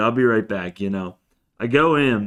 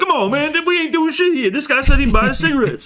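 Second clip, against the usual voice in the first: play-acted very high, heated yelling; 4 dB louder than usual. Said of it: "They're both yelling at me".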